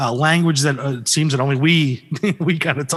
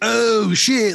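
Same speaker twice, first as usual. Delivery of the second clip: put-on higher, spaced-out stoner tone; 7 semitones higher than usual. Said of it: "kind of tonal stoner".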